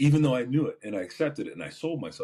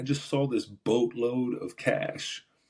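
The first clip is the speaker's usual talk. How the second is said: plain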